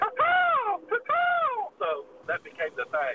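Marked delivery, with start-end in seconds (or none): 0.0-1.7 very high-pitched, screeching, screaming bird call. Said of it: "acting like the bird was talking".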